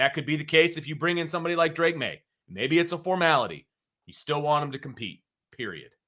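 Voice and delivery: getting worked up, heated, rushing ahead fast. A speaker pressing a point to the other host, getting heated. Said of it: "I'm getting a little heated about this. I need to slow down".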